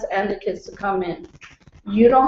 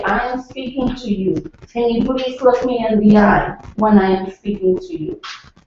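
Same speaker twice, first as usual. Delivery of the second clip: calm, composed, respectful, unraised voice. A speaker demonstrates how to address someone who won't listen, calm, voice not raised. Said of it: "I'm not raising my voice".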